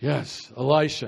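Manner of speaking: grave, very low, very serious voice. Telling the audience how to say the name elisha, very serious tone. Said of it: "You got to say it with a very serious".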